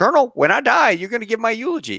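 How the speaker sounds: very high, peculiar speech mannerism. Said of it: "he talked like this".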